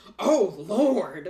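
put-on very loud, high, disgusted older lady exclamation. Retelling what an older lady at the mall said: imitating a disgusted older lady. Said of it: "gives me this disgusting face, and goes".

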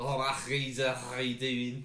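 slow, put-on Scouse accent. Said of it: "Or Scouser one".

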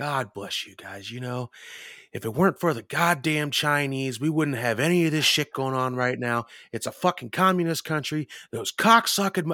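put-on drunken yelling. Retelling a drunk woman at a bar, imitating loud drunken ranting. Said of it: "she just starts getting loud".

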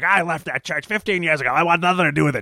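put-on grumpy old man voice. Retelling a movie scene where a man opens the door: imitating a grumpy old man. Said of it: "this grumpy old man opens the door".

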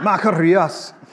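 put-on unhurried Scottish accent.

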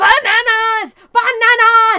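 shrieking scream, very high and very loud. Recounting a story where a man meets Watermelon Man, retelling his scream. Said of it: "he just starts screaming".

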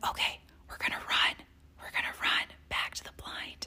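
very quiet, breathy, barely audible whisper. Retelling what the husband said on hearing a turkey close by: imitating a whisper. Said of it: "he whispers".

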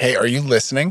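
ordinary delivery

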